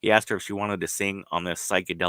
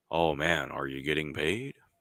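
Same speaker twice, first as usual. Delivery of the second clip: deep rumbling voice, lower pitch; 3 semitones lower, 3 dB quieter than usual. Retelling a conversation about touring: B B King's deep rumble. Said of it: "B B King's deep rumble".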